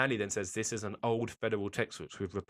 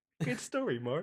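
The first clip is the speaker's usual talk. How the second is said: put-on laughing while talking, higher; 10 semitones higher than usual. Retelling a film scene where an actor laughs through his line: imitating someone laughing while talking. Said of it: "Why the fuck is this motherfucker laughing?".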